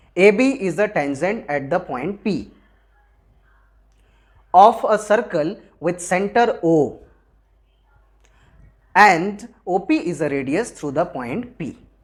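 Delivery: read in three chunks with pauses between. Showing how to memorize a line: read in three chunks with pauses. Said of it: "जहां मैं रुकूंगा वहां पे आप comma लगा के लगा लेना ... ऐसे तीन बार में आपको तीन पार्ट में याद करना है".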